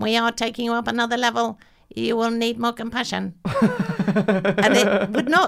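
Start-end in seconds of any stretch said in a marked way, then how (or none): 0.0-3.3 fast, rattled-off put-on voice. Retelling what a Dalek said to them: Dalek voice. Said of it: "this Dalek said in a Dalek tone".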